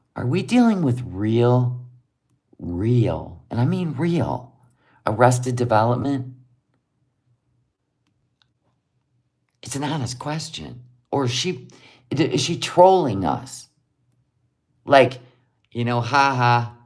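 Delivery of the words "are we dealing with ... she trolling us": hushed, quiet whisper. Leaning in to ask someone a serious question so nobody else hears, whispering. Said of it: "I'm going to whisper so nobody hears".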